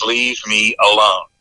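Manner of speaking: voice dropped right down, deep and low. Retelling what an unresponsive lady said as her head went back: imitating a deep voice. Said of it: "in a deep voice".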